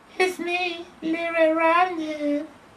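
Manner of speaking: remarkable falsetto. The wolf at the grandmother's door answers her, in a remarkable falsetto. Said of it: "said the wolf in a remarkable falsetto".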